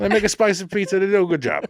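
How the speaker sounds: put-on Italian guy voice. Reviewing a pizza place, a co-host repeats the rating line in an italian guy voice. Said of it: "Kind of did an Italian guy voice there".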